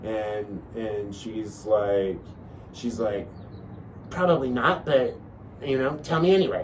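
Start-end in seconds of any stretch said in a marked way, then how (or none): 4.1-6.6 high, small, worried motherly voice. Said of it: "I had that little voice in my mom".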